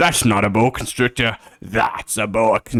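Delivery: put-on, attempted Australian accent. Trying out an australian accent for a superhero bit: attempted australian accent. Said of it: "Like Australian Superman".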